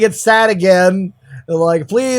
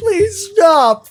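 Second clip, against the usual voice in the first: play-acted very high, tearful, sobbing begging tone; 11 semitones higher than usual. Retelling how a manga character reacts: imitating crying. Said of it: "crying again".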